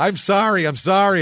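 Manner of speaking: put-on high, frantic voice. Retelling a confession to a priest at last rites: imitating panicked apology. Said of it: "panicking and beginning my confession".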